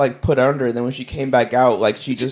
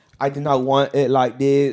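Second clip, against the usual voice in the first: put-on Chinese accent. Imitating a woman with a Chinese accent from a documentary: imitating a Chinese accent. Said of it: "Let's see the accent".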